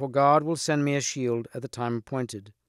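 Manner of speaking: ordinary delivery, nothing marked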